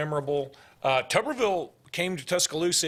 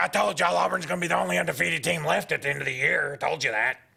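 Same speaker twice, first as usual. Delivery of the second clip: creaky, synthesizer-like broadcaster voice. Recalling a woman who broadcasted from new york, imitate a voice-synthesizer-like woman broadcaster. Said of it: "And she kind of talked like this".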